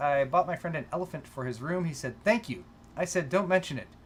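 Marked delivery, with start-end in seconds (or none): none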